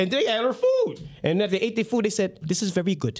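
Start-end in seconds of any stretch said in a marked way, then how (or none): 2.4-3.2 put-on Indian accent. Retelling what they said after eating the food, in a put-on Indian accent. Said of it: "how I usually do the Indian accent".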